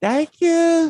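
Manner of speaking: very high, phony, fake sweet woman's voice. Showing how women answer: imitating a woman's fake voice. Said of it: "women always put on that fake ass".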